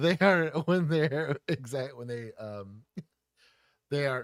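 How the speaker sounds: loud speech breaking up in a giggle fit. Reading out a chat quote to others, giggling while talking. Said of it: "I'm having a giggle fit".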